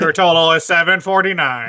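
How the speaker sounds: loud computer speech voice, like a talking computer. Retelling a sketch where Stephen Hawking works a drive-through: Stephen Hawking computer voice. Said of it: "Stephen Hawking is the guy that hands".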